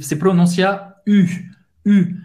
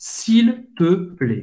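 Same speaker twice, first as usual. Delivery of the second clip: s'il te plaît spelled out, said very slowly.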